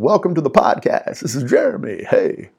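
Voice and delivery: animated, sing-song radio announcer voice. Showing how to record a podcast intro, in a radio voice. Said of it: "Nice radio voice".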